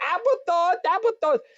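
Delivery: put-on panicked, frantic high shrieking, one word repeated. Recounting a panic with a companion who screamed, retelling frantic screaming. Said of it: "And he's screaming".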